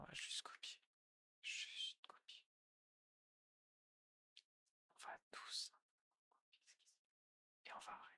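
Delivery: slow, very quiet whisper, barely audible, unhurried. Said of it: "quand je chuchote, vous m'entendez pas".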